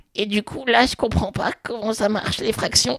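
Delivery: high, childlike, put-on little-kid voice. Retelling a test where a woman role-played a four-year-old: imitating a child's voice. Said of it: "elle prend une voix d'enfant".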